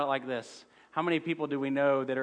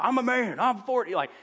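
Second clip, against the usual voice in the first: put-on very high, stretched-out hollering; 10 semitones higher, 5 dB louder than usual. Retelling how the coach of Oklahoma State yelled back: imitating Mike Gundy yelling. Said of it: "yells it out".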